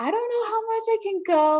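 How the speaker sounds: very high-pitched, hysterical sobbing through the words. Retelling arriving at an aid station limping, imitating own hysterical crying. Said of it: "crying pretty hysterically".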